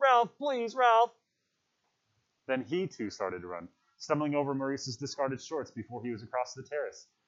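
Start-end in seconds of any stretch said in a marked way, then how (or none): 0.0-1.1 very high, shrill shout. A boy calls after another boy who has run off; shouting. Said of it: "Piggy shouted".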